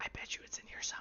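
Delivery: hushed, awed, marveling whisper. Voicing a character who looks around everywhere: whispering in awe. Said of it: "kinda whispering to you, like, just kind of in awe".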